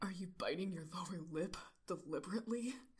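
dark tone, fuckboy-style delivery. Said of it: "he asks darkly".

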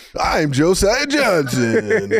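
high radio DJ voice. Working on an announcer voice, introducing himself by name: Casey Kasem voice. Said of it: "I'm working on my announcer shit".

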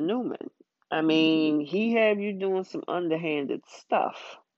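plain

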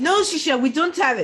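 shouted, full-voiced, loud, high-pitched. Acting out the husband, answering a request for money: yelling. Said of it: "You don't have to yell".

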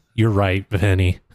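ordinary delivery

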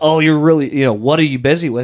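mock condescending tone. Showing how not to ask a coworker about their work: mock condescending tone. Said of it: "don't do it in a condescending way".

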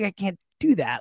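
ordinary talk

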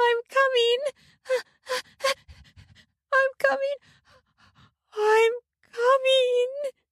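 very high, drawn-out crying out. A woman reaching orgasm during sex: crying out. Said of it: "cried out".

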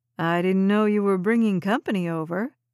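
ordinary delivery

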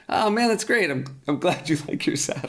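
high, very polite, sweet-sounding delivery. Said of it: "who was very politely saying".

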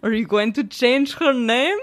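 put-on Russian accent. Retelling a phone call from a father: imitating dad's russian accent. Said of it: "hence the accent I'm gonna do".

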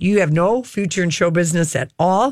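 normal talking voice

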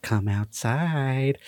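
put-on creepy, scary young horror-girl voice. Retelling a streamer luring someone outside: imitating scary young horror girl voice. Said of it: "this scary young horror girl voice on filter".

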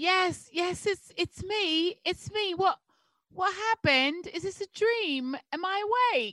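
fake British-accented speech. In a read-aloud scene, the speaker voices Luis's reply: British accent. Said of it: "British accent for the next one".

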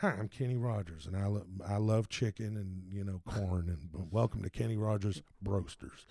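soft, easy, relaxed pitchman spokesman voice. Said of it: "So the first one was just me going".

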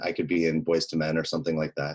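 ordinary talk, nothing marked

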